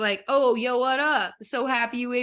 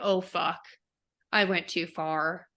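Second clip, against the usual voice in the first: put-on sad voice, lower and quieter; 6 semitones lower, 5 dB quieter than usual. Retelling the Phantom after the kiss: acting out the Phantom broken. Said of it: "he's just broken and he's like".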